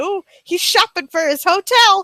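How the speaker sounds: plain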